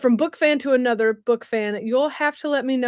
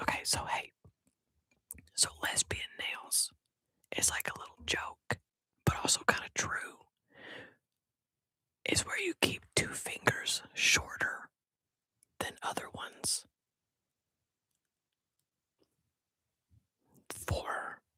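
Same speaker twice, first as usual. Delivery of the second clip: hushed whisper, higher and quieter; 8 semitones higher, 16 dB quieter than usual. Answering a question after saying it will be whispered: whispering. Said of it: "I'm gonna whisper this".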